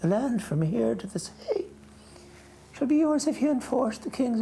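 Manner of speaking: voice pushed very high in pitch. Speaker retells saying his line while his armor pressed his neck: high-pitched voice.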